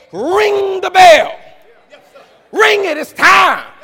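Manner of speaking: slow, high, booming, commanding shout.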